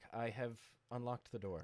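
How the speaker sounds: soft, flat, expressionless deadpan delivery. Player acting out what their character announces to everyone in the room, deadpan. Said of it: "like deadpan".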